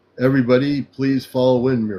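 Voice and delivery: firm, authoritative, commanding voice. Demonstrating his command voice as an Ashtar commander, firm commanding voice. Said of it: "in my command voice as an Ashtar commander".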